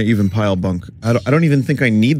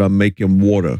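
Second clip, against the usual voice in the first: put-on broad Brooklyn accent, laid on very thick; 2 semitones lower than usual. Retelling own words said to mom: strongest brooklyn accent. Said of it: "in the most Brooklyn accent ever".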